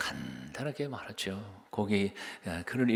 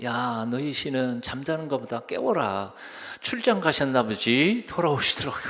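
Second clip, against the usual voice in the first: louder, higher-pitched, mocking, heckling taunt. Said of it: "엘리야가 꽉 놀리잖아요".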